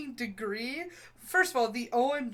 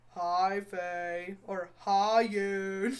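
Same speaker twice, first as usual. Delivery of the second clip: put-on flat monotone voice, lower; 3 semitones lower than usual. Imitating how a friend greets people: monotone greeting imitating Jara. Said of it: "it's the monotone".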